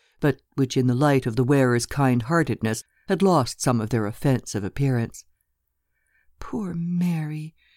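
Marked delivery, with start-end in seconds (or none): 6.4-7.5 soft murmur, lingering on Mary. Lena speaks in front of Mrs. de Bergé, murmured. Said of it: "murmured Lena".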